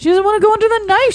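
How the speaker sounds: high-pitched, fast mock pity, put-on sympathy.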